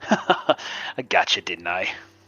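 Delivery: laughing through the words. Showing how to play a character teasing someone he snuck up on, laughing while talking. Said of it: "kind of just laugh like".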